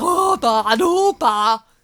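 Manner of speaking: very slow, drawn-out blustering harrumph. Mocking the Colonel's wild gestures: imitating the Colonel's blustering. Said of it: "He's like".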